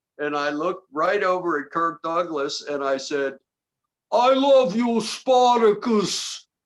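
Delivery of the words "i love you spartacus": put-on high-pitched, stretched-out Brooklyn accent. Retelling a line said to Kirk Douglas, the way Tony Curtis delivered it, Tony Curtis delivery. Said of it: "the way Tony Curtis delivered it".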